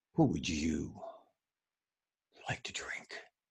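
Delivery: play-acted breathy, self-important, overdramatic profound delivery. Retelling how a guy read a line to show how deep he was: imitating a showy, deep reading. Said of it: "He wanted to show everybody how talented he was and how deep he was. ... It was something like this".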